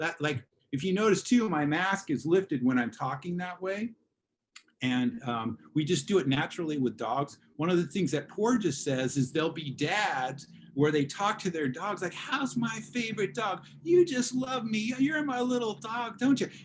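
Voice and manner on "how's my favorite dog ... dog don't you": very high, honeyed, sweet pet-talk voice. Describing how dads talk to their dogs, imitating mellifluous dog-talk. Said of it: "people will use the mellifluous vocal tone with the dog".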